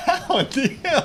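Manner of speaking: high, wide laughing disbelief.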